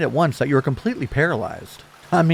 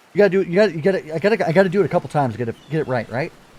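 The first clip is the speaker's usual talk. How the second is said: usual speaking voice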